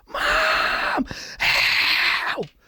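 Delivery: put-on scream. Telling of finally getting it open, reenacting screaming to mom for help. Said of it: "and I scream".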